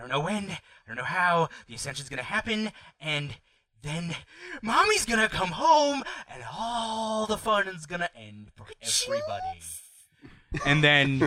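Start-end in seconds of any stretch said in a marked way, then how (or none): 0.0-9.6 ominous villain voice, higher pitch. Voicing Mister Owl as the game master: villain's ominous speech. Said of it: "He's like, like, uh, he says".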